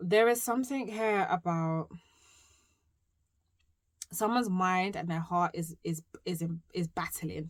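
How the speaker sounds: stammering, stuttering, repeating and tripping over words. Speaker giving a numerology reading, stuttering. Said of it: "You see, I'm stuttering".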